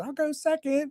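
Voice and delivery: very high, tiny, squeaky little mouse voice. Retelling offering to go second in front of the group, in a little mouse voice. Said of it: "Right in this little mouse voice".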